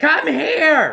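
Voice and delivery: shrill, high, loud shouting. Retelling a teacher calling from the front: imitating teacher shouting. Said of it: "She's just shouting at the top of her lungs".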